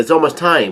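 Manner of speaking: plain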